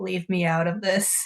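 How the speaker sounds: bleary, groggy, cried-out voice. Voicing a character under a blanket who cried all night, in a groggy voice after crying. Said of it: "just this groggy voice because she's basically been crying all night".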